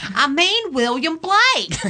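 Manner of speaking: very high, put-on Southern accent. Prompted to say it, the speaker answers in a Southern accent. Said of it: "Say it. Do it".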